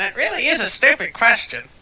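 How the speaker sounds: tiny bird voice, shrill, very high, loud, swooping. Imagining a raven interpreting for a gesturing octopus, little bird voice. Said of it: "It's in a little, like, bird voice".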